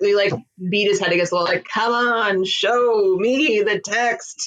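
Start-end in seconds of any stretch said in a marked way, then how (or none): 1.6-4.5 very slow, theatrical, overly dramatic, sarcastic. Retelling how he would react when asked for evidence, mock overly dramatic. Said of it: "very overly dramatic".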